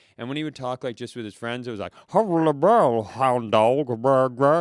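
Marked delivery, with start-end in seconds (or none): 2.1-4.6 booming, garbled underwater-sounding mumble, loud and slow. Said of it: "here we go with an [name] impression".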